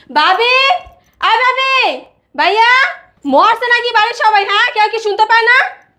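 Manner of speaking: loud yelling, calling out. Calling for the sister-in-law and the household, shouting. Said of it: "এত গলা চিল্লাইতেছো কেন?".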